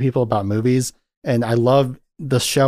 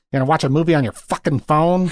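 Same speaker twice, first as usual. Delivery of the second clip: held-in, reined-in yelling rant; 3 semitones higher than usual. Doing an impression of David Lynch yelling at people: David Lynch impression, yelling. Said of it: "I'll do my David Lynch impression where he yells at people".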